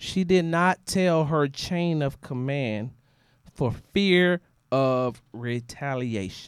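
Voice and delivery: slow, deliberate, each word spoken plainly. Repeating a sentence for the people up top who can't hear, saying it slower. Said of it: "let me say that a little bit slower".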